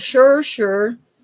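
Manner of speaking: put-on speaking in a Minnesota accent. Telling a joke, giving Olaf's answer to his friend Sven, Olaf in Minnesota accent. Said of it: "I don't do the Minnesota accent real well".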